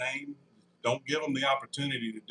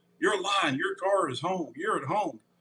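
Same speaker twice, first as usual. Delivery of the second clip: put-on scream, higher-pitched; 5 semitones higher than usual. Retelling a phone call where the caller screamed at him: imitating someone screaming. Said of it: "he's screaming at me".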